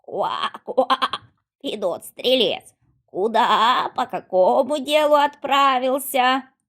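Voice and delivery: loud, croaky, croaking frog voice. Narrator reading a fairy tale, a magic frog questioning the archer: croaking frog voice. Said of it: "а в кровати прыгает лягушка. Видно, непростая лягушка, на шее у нее ожерелье. / а в кровати прыгает лягушка. Видно, непростая лягушка, на шее у нее ожерелье. Лягушка заквакала и спрашивает [name]а: /".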